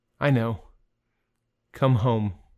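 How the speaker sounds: put-on gentle voice. Retelling what he said in reply, quoting someone speaking gently. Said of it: "he gently says".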